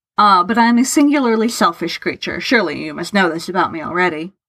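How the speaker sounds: plain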